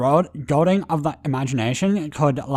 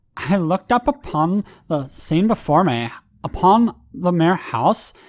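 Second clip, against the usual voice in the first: put-on Californian Valley Girl accent; 4 semitones higher than usual. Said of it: "in a Valley Girl accent".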